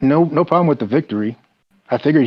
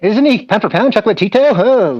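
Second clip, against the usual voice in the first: over-the-top boxing commentator voice, pitched higher; 10 semitones higher, 4 dB louder than usual. Mocking a boxing commentator calling a fight: Jim Lampley impression. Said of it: "That's what he sounded like, Lampley".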